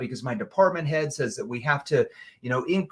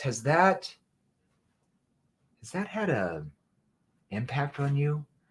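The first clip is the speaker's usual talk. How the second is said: soft, gently worried, caring tone; 5 dB quieter than usual. Asking whether three years of stress has had an impact, soft concerned tone. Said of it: "Notice how my tone softens. It's more of a concern tone at that point".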